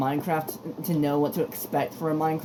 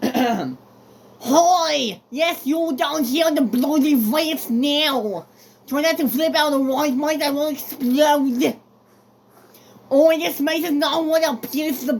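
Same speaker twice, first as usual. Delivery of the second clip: terrible, exaggerated British accent, very high pitch; 10 semitones higher, 6 dB louder than usual. Deliberately making it sound terrible, an exaggerated bad british accent. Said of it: "I'm gonna make it in the worst British accent possible".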